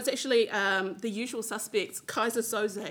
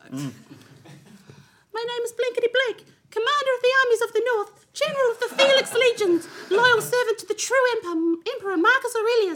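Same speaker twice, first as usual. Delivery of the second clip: very high, loud, goofy put-on silly voice; 13 semitones higher, 5 dB louder than usual. Speaker reads this one aloud in a silly voice because it amuses them. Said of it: "I'm going to read this one in a silly voice".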